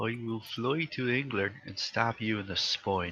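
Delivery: put-on Irish accent throughout. Addressing another speaker, in an irish accent. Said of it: "You're doing an Irish accent".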